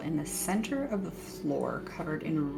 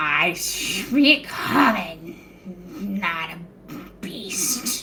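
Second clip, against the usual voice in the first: very loud, croaky, sloppy creature voice; 2 semitones higher, 9 dB louder than usual. The narrator voices the creature the party took for a pet: croaky, sloppy voice. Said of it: "you hear a real croaky, sloppy voice go".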